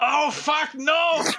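high, loud put-on German accent, blurted. Retelling a player's putt from off the green, quoting him: german accent. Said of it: "all you hear is this German accent going".

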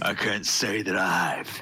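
orc war chief character voice. Game master voices the orc chieftain answering the party, orc chieftain voice. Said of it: "As you see the orc chieftain out with his greatsword and steps out from the orcs".

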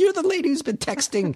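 high, jeering call.

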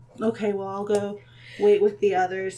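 deflated, disappointed dejected dwarf voice. Voicing a dwarf told his battle tests are postponed: deflated, disappointed dwarf. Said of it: "kinda looks a little deflated and is like".

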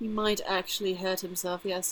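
pompous, put-on British accent. Speaking in character about a companion who may get hurt: becoming more British accent. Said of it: "I'm becoming more British".

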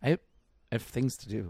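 play-acted dead-serious, flat, unplayful deadpan delivery. Retelling how a playful line to Brennan came out, recreating the deadpan delivery. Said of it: "It came out so deadpan".

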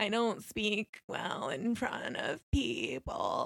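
put-on slow, tearful crying voice, sobbing delivery. Retelling how a cast member answered another cast member: imitating someone crying.

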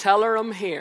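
put-on Newry accent, laid on thick. Retelling a man's reply to the receptionist Sinead, in Nathan's thick Newry accent. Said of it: "in his thick Newry accent".

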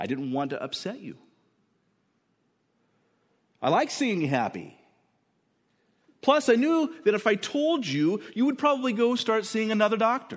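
smug, defensive tone. Voicing the doctor answering the patient: smug and defensive. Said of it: "a bit of smugness and maybe even defensive self-justification in his voice".

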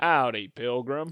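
put-on drawl of an old cowboy. Greeting the other host: John Wayne voice. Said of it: "is that supposed to be your John Wayne voice".

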